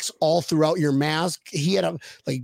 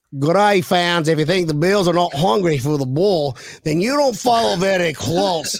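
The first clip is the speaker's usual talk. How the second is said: put-on loud voice edging into a Scottish accent; 6 dB louder than usual.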